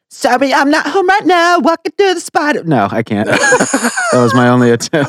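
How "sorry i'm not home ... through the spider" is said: put-on very high teenage girl voice. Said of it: "can you do Gina's teenage girl voice".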